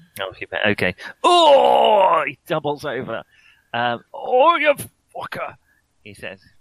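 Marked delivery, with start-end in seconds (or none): 3.8-5.6 very high, winded, breathless grunt. Voicing a doubled-over character in a tabletop game, winded grunt. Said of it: "He grunts, winded".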